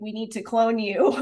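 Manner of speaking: plain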